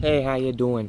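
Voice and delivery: put-on Midwestern accent. Host greeting viewers at the start of a new video, midwest accent. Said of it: "Like that Midwest accent".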